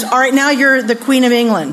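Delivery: plain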